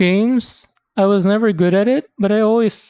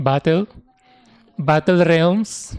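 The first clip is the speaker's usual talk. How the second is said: Filipino English accent and pronunciation; 3 semitones lower than usual. Recalling a game title, the speaker says it in a Filipino English accent. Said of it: "pronounce it with a Filipino English way of saying it".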